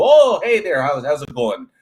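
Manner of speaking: loud, sing-song put-on Kansas accent, lighter drawl. Showing how speech sounds further north in Kansas: imitating a Kansas accent. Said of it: "eventually you're gonna get to".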